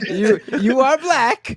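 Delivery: loud, stumbling put-on comedy character voice. Picturing critics confronting her, in a mocking Borat voice. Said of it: "the Borat voice".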